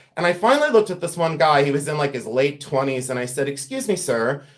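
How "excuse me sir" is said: put-on refined, polite, courteous English gentleman accent. Retelling stopping a man at an antique mall: imitating a fine English gentleman. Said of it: "the fine English man that I am".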